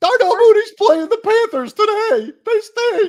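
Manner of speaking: put-on squeaky joke voice, very high and very loud. Discussing which player to start this week, one speaker makes his case: put-on high voice. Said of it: "gonna do my high voice".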